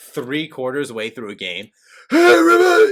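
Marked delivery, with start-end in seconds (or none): 2.1-2.9 very high, very loud, shrill worn-out holler. Imitating a yell three quarters through a game: Doc Rivers yelling. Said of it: "Doc Rivers' voice".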